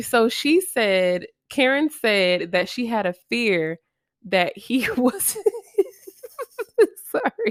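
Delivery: words broken up by laughter, swooping pitch. Recounting what Karen said, still laughing at an own earlier remark: laughing while talking. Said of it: "I'm still laughing at what I just said".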